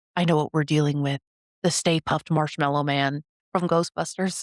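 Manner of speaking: mock dead-serious tone. Recapping an episode, the speaker quotes a character's line in a mock-serious voice. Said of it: "in the most serious voice".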